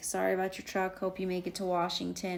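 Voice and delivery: ordinary talk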